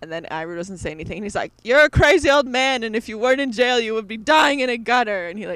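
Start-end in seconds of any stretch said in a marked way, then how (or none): 1.6-5.3 put-on yelling voice. Speaker recapping a scene where Zuko yells at Iroh, retelling Zuko yelling. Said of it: "runs out after yelling at him".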